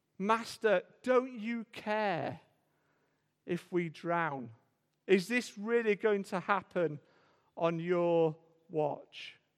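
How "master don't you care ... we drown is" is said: ordinary delivery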